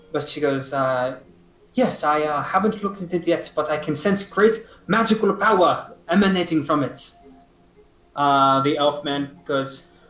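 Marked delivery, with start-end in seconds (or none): 1.7-7.1 botched, bad put-on French accent. A game master voices a woman answering the players, in a bad french accent. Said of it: "fucking botching this French accent".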